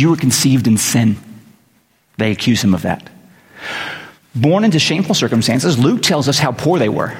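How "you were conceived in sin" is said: ordinary delivery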